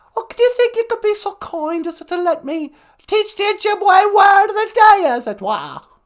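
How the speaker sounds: very high royal lady voice. Playing a caller phoning into the podcast: Queen Mum impression. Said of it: "It's me, the Queen Mum".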